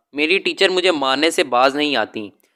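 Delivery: ordinary delivery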